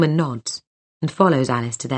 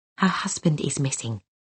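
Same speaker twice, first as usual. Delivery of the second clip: half-whispered, pressing and urgent; 5 dB quieter than usual. Reading a story aloud, a character tells another: urgent half-whisper. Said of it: "she whispers urgently".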